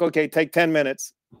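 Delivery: ordinary delivery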